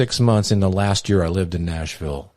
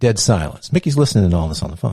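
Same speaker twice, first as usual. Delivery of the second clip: usual speaking voice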